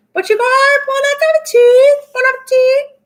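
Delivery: very high, slow voice. Imitating how a TV cook greeted viewers: high-voiced Julia Child impression. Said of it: "very high voice".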